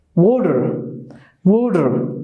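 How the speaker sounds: "water" said with American T sound. Showing learners how Americans pronounce the T in a word: American accent. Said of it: "Unlike the American English".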